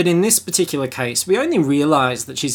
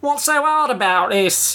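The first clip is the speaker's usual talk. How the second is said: put-on odd, very high-pitched English accent; 11 semitones higher than usual. Quoting the actress's first line from the film: really odd english accent. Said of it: "With a really odd English accent".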